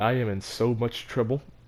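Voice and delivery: ordinary delivery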